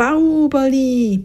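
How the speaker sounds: high, drawn-out shout.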